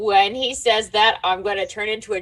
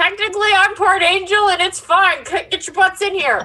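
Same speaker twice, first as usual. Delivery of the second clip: very high, shrill yelled shout; 10 semitones higher, 3 dB louder than usual. Calling the others into a room in character: yelling out. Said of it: "I'm gonna yell out".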